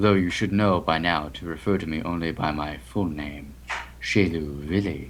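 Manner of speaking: deep, emotionless, dead flat monotone. Narrator voicing the stern-faced figure's reply, Shelu Vili's deep, emotionless voice. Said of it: "In a deep, emotionless voice".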